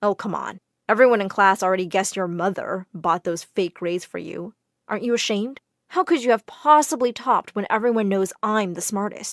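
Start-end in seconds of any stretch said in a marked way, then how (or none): none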